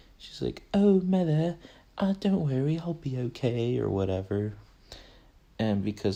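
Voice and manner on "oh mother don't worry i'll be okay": affected, put-on British accent, pitched up. Retelling a film scene of a character saying goodbye to her mother: imitating a British accent. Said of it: "telling her mother goodbye in a British accent".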